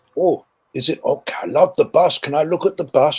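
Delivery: non-native speaker's broken English. Retelling what a german soldier said about the bus: imitating broken english. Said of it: "comes on in broken English saying".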